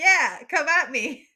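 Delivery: full-volume, very loud, taunting, defiant yell. Character stepping back into the middle of the room, yelling at it. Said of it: "As I'm yelling at it".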